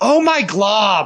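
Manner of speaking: put-on cheeky child voice, high, slow, loud, drawn out.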